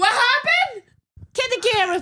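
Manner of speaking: high, loud, mock shocked and panicked shouting.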